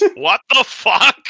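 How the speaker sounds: startled, shocked, very high, loud outburst. Voicing a monk staring at intruders, shocked monk voice. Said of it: "he says".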